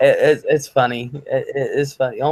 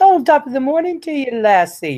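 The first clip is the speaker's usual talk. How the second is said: put-on leprechaun Irish accent, very high; 12 semitones higher than usual. Trying out accents on request, attempting a leprechaun accent. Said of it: "a leprechaun accent".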